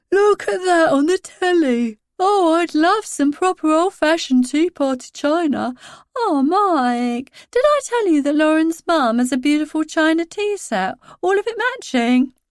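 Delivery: high-pitched, put-on, teasing voice. Mike imitates the narrator's past hints about wanting china, mock high-pitched imitation. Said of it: "putting on a high-pitched voice and flapping his arms about".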